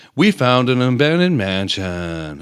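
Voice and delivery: drawn-out vlogger intro delivery. Mocking YouTubers who explore abandoned buildings, the speaker imitates them in a monotone YouTuber voice. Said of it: "that fucking stupid monotone".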